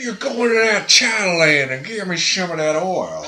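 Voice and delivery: loud, very high put-on big Texas man's accent. Imitating a big Texas man from a game who gives equipment, put-on Texan voice. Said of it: "big old Texas man who gives you".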